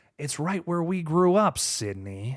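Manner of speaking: slow, drawn-out, rough, gravelly voice. Showing how a man talks now compared to before, in a slower, more gravelly voice. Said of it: "he's talking a lot slower and like more gravelly".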